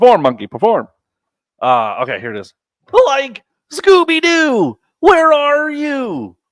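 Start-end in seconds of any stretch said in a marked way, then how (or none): 3.1-6.3 high, stretched-out cartoonish voice. Showing off a hidden talent when friends ask for the thing: Shaggy impression. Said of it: "pretty solid Scooby Doo and Shaggy impression".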